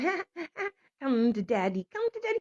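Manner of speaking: high, giggling, mocking put-on demon voice. Retelling a dream where a demon taunts: imitating a giggling demon. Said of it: "she's giggling".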